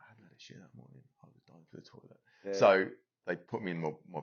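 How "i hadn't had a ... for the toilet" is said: very soft, very quiet hushed whisper. Speaker telling a story to the other speaker, whispering. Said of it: "you don't".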